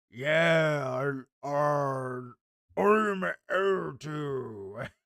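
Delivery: mock big, dumb-sounding narrator voice. Imitating the audiobook reader's demon voice, mocking a dumb-sounding voice. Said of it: "I wouldn't say it's, like, quite Hulk Hogan".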